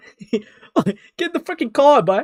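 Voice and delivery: bad, loud, shrill, high bellow in a Boston accent. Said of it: "a poor attempt of a scout impression".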